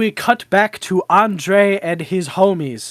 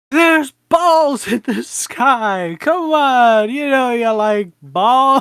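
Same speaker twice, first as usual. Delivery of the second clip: put-on yelling, high and drawn out; 5 semitones higher than usual. Retelling a movie scene where the bridesmaid calls into the woods: imitating someone yelling. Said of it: "she's yelling out".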